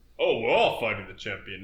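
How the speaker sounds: ordinary talk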